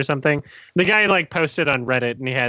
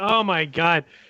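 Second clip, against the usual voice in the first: put-on exhausted, worn-out groaning voice; 4 semitones higher than usual. Retelling a guy who keeps telling someone to leave, imitating an exhausted man. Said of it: "he's absolutely exhausted at this point".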